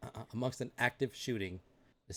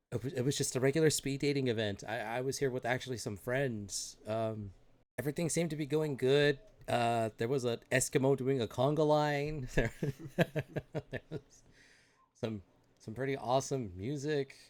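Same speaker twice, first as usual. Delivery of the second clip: plain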